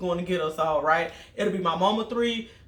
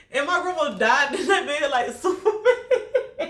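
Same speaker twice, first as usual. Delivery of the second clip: high-pitched, words breaking up with laughter; 7 semitones higher, 4 dB louder than usual. Telling a funny family story about grandma stopping the van, laughing while talking. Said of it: "I'm sorry for laughing, y'all".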